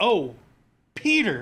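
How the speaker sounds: animated voice with pitch swooping around. Retelling a movie moment where a character says Peter: Ned voice. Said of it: "It's that Ned voice".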